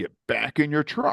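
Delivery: put-on called-out yell, high and urgent. Recounting being shot at, the speaker retells ordering everyone back into their trucks, retelling a yell. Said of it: "and I'm yelling at everyone".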